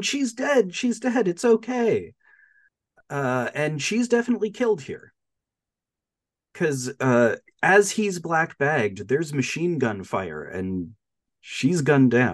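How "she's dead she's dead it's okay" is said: high-pitched yelling. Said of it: "he's yelling".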